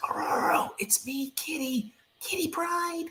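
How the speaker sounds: soft, hushed, lightly high whisper. Reading a character who can't make a sound identifying herself, whispering. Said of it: "She whispers".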